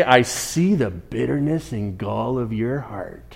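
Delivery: put-on pirate-style voice. Pretending to call someone out in front of everybody: pirate imitation. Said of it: "I don't know why I'm doing a pirate imitation".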